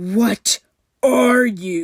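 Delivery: spoken as a sharp hiss. A soldier, grabbing an axe, confronts Summer: hissed. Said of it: "he hissed".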